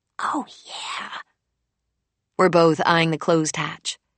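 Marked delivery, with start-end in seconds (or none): 0.2-1.1 whispered, hushed, conspiratorial tone. Reading a sister's whispered answer to a shared memory: whispering back. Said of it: "She whispers back".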